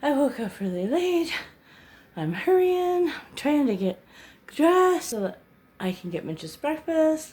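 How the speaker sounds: out of breath, breathless, winded. Speaker rushing after waking up late to make breakfast: out of breath. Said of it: "I'm out of breath".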